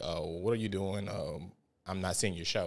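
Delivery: ordinary talk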